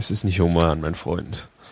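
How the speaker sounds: low, sleepy, erotic morning voice. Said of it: "Man hört es dir an".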